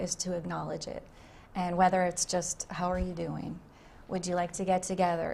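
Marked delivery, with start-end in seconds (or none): none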